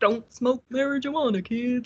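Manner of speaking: high cartoon-character voice. Showing a voice first tried to copy as a kid: Mister Hanky voice. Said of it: "I used to do Mister Hanky too".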